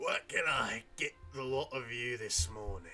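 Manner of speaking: rough, hoarse voice. Narrating a character behind the bar asking the group for their order: raspy voice. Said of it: "he says in a raspy voice".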